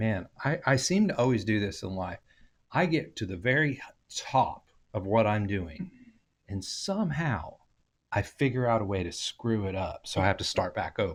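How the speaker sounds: normal talking voice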